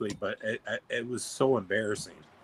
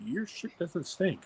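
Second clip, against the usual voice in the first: close, soft, high-pitched whisper; 7 semitones higher, 8 dB quieter than usual. Retelling a nurse bending down to his ear: imitating a whisper. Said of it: "lean down and whisper into my ear".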